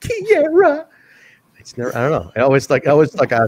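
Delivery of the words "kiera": very high, tearful voice close to tears. Imitating Tessa Blanchard saying a name: imitating her tearful voice. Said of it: "holding back tears".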